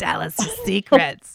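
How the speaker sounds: raspy, hoarse voice. Podcast co-host, prompted by the other host, speaks in a raspy voice. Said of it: "in a raspy voice".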